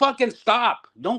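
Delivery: fed-up barking yell. Retelling yelling at nervous wrestlers backstage: retelling own yelling. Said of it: "because I'm yelling".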